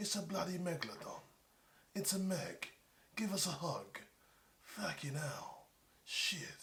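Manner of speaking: put-on slow, laid-on English tough-guy accent. Mocking how an action star says every line: Jason Statham impression. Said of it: "he just says stuff a lot like this".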